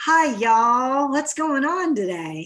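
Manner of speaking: loud, drawling Southern US accent. Showing how friends with a Southern drawl sound, in a Southern drawl. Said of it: "do you have any friends who have a Southern drawl?".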